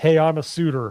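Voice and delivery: put-on Midwestern American accent. Complaining about a movie's accents, mimicking how its characters talk: midwestern accent. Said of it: "Midwestern accents".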